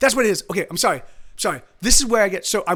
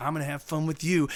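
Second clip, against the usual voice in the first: put-on low, predatory, aggressively suggestive, creepy menace; 4 semitones lower, 7 dB quieter than usual. Retelling a dream where a man approaches: imitating an aggressively sexual menace. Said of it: "aggressively, like, sexual, like, rapey kinda thing".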